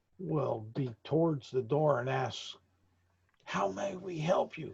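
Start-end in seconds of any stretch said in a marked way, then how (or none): 3.5-4.8 very hushed, higher-pitched voice. Narrating a scene, the speaker voices an acolyte at the door, in hushed tones. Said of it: "Very hushed tones".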